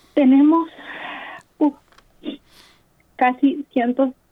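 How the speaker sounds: cracking, breaking, faltering, halting voice. A Nicaraguan caller making a plea, voice breaking. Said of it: "se me quiebra la voz".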